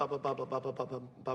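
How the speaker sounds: mouth drumming sounds. Ordering a drummer to read measure one oh one: mouth drumming sounds. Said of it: "are you, in a fucking a cappella group?".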